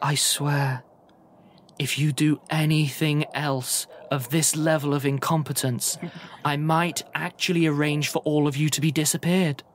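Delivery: posh, cultured, polished, refined woman's voice. A game narrator voices a woman speaking from behind a door, in a cultured woman's voice. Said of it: "an incredibly cultured voice on the other side of it going, woman's voice".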